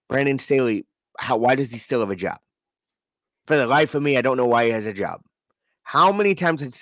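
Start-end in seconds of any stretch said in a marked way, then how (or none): none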